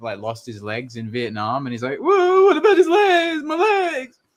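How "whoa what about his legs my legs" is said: put-on crying voice, higher. Imitating Rambo crying about a friend who lost his legs: crying Rambo impression. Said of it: "Rambo's, um, crying".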